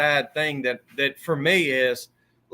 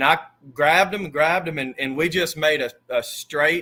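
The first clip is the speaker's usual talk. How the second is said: ordinary talk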